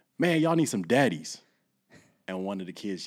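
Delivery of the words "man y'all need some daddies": put-on loud, high hollering yell. Speaker recalls yelling out to kids getting ready for food: retelling a yell. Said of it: "I just yelled out".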